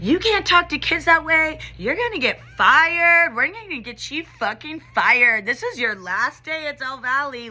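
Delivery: high, mocking, taunting voice. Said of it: "taunting me".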